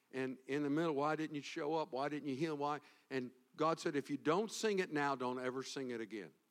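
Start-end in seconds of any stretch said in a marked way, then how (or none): none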